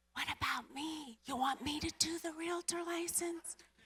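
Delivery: secretive, hushed stage half-whisper. Retelling a half-whispered offer made during a phone call: retelling a half-whisper. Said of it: "I'm whispering to Grant".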